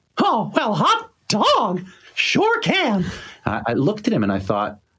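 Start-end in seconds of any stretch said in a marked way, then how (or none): 0.2-3.1 very high-pitched, drawn-out squeaky character voice. Retelling how Walt Disney answered an interviewer: Walt Disney doing Mickey Mouse. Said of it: "Can you still do the voice?".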